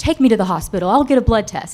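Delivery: loud mock scream.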